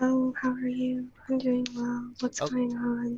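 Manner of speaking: very quiet whisper. Whispering on request to show how quiet sounds can be heard: whispering very quietly. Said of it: "I want you to whisper something really quietly".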